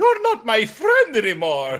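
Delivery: high, loud, swooping, sing-song evil cartoon villain voice. Doing a requested evil Mario voice: evil Mario voice. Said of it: "Evil Mario".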